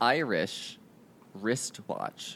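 said slowly. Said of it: "say it slower".

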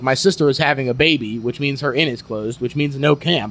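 plain

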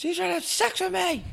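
frantic, very high, shrill, ragged, rough yell. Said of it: "Start yelling".

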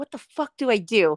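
normal talking voice

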